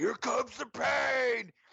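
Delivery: play-acted very high holler, last word held long. Retelling what a man at the game kept yelling, imitating his yell. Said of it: "that's all he's doing is yelling like".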